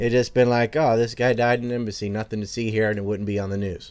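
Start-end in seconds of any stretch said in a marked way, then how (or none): none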